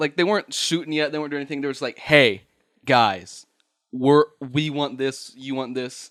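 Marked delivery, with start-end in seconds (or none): none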